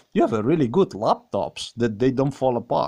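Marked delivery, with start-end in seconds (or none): none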